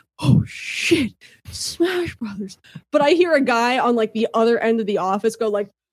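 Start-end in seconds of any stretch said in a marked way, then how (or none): 0.2-2.6 very quiet, slow, high-pitched hushed exclamation. Retelling sitting at a desk at the office seeing the teaser: retelling own quiet exclamation. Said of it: "very quietly like".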